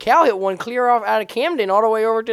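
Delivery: put-on funny Baltimore accent, pitched way up. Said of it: "He kept going".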